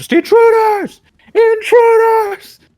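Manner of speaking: very loud, very high booming shout. A game narrator voices a guard mid-combat, shouting really loud. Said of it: "just shouts really loud".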